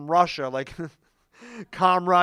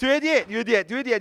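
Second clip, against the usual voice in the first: mock yelling, higher; 5 semitones higher than usual. Retelling a cashier saying a price at the register, imitating a cashier yelling. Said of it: "yelling in my face".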